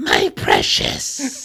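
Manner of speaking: very low, rough croak from the throat. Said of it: "It sounded like I hurt your throat".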